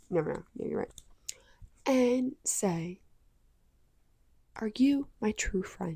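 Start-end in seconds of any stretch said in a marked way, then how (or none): 4.6-6.0 soft-spoken, gentle voice. Suggesting what to ask someone while looking in their eyes, soft-spoken voice. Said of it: "In the exact soft spoken voice".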